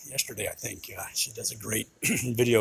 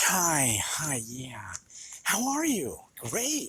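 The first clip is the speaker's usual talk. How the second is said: mock-sweet, put-on nice woman voice, higher, slower; 5 semitones higher than usual. Describing a video, the speaker acts out a woman greeting the barista: imitating a really nice woman. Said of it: "She starts out really nice".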